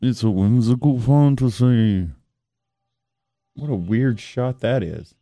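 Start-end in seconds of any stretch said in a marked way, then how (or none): 0.0-2.1 loud documentary-presenter narrating voice. Imitating how the presenter of a TV show talks: imitating the show's presenter. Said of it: "He talks like this".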